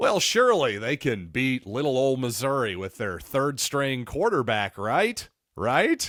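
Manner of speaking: a little sarcastic, tongue-in-cheek, swooping sing-song. Previewing a football game and mocking the favorite's confidence: sarcastic. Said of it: "I'm obviously being a little bit sarcastic there".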